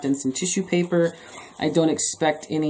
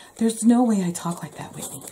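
high, crazy character voice; 5 semitones higher than usual. Speaker quotes their mom talking to them, imitating mom's voice. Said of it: "That's my mom voice".

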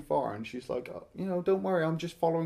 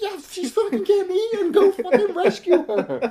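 shrill, very loud, high exasperated yell; 10 dB louder than usual. Retelling watching a movie, shouting at the people on screen: retelling exasperated yelling at screen. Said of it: "I'm like".

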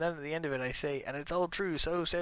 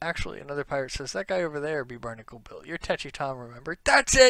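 ordinary delivery

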